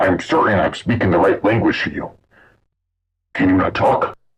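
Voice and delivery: deep, warped, distorted otherworldly creature voice. Narrating a story, the mysterious being questions a terrified man in a deep voice. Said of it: "The mysterious being said in a deep voice".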